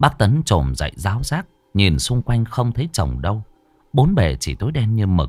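ordinary delivery, nothing marked

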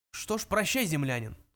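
ordinary delivery

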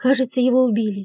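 ordinary delivery

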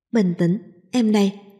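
plain reading voice

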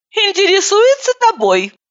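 snarky, snide, very high sing-song taunting tone. In the car, the narrator answers a passenger's question, snidely. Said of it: "ехидно ответила я".

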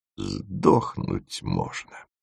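soft, mumbled mutter with a shudder. The dig leader looks at a tin of canned food, muttered with a shudder. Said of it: "пробормотала она с содроганием".

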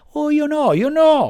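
shouting through sobs. Reading a story, Pinocchio, caught by the farmer, denies it; shouting while sobbing. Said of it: "gridò Pinocchio singhiozzando".

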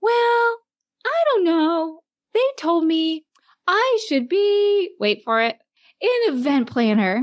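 wonderfully sweet, high voice. Retelling what Erin said after the career center, imitating Erin's sweet voice. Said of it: "she has this high-pitched, wonderfully sweet voice".

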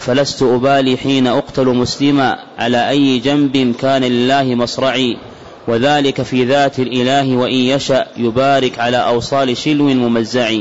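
ordinary delivery

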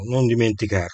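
ordinary delivery

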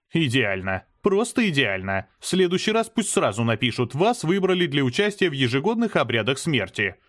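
ordinary delivery

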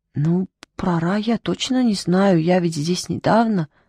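scared, fearful, fumbling mumbled mutter. Bobo answers the one who roared at him: muttering fearfully. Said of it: "забормотал Бобо, испуганно оглядываясь".

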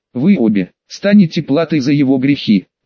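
plain

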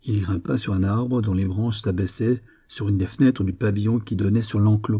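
ordinary delivery

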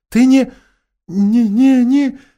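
quavering, unsteady, trembling high voice. Susan, facing Aslan, starts a question she cannot finish, in a trembling voice. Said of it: "дрожащим голосом спросила Сьюзен".

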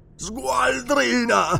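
booming, rasping thunderous roar, very high. Narrator reads Olmec's outburst at a woman, thunderous voice. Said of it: "La sua voce tonante echeggiò nella stanza".

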